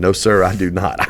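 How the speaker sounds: ordinary talk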